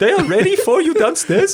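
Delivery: terrible fake Swiss accent. Telling a story about Nick, the speaker voices another figure: terrible Swiss accent. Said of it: "I'm insulting all our Swiss listeners".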